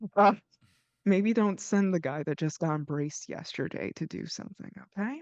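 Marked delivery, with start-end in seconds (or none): 1.1-5.2 theatrical stage-whispered aside. Character speaking to another in a scene, whispering. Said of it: "I'm whispering".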